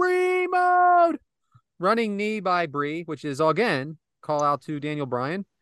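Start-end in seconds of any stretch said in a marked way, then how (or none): 0.0-1.2 loud, high yelling. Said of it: "and then she yells".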